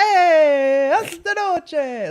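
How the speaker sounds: shrill, booming, high-energy voice with "hey" stretched out. Describing a comedy sketch about an Italian talk show host: Vinny Vedecci impression. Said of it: "Vinny Vedecci, where he's like".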